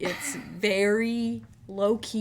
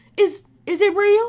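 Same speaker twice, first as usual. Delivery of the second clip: squealed very high, very loud, very slow; 11 semitones higher, 10 dB louder than usual. Quoting a Vine of a woman in a Walmart: imitating the Walmart Vine woman. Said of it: "And then she goes".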